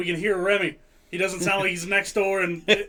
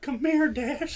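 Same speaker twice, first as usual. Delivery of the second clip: higher-pitched put-on creepy voice; 7 semitones higher than usual. Joking about a creepy pervert neighbor: Herbert the pervert voice. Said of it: "Herbert the pervert?".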